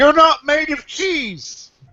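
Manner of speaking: very high, drawn-out shout in a street urchin voice. Voicing a filthy urchin during an ambush: shouting as a filthy urchin. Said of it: "as a filthy urchin, shouts".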